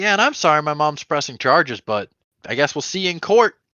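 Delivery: snide, sarcastic tone. Retelling a reply to an apology about pressing charges: imitating own sarcastic reply. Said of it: "I very sarcastically go".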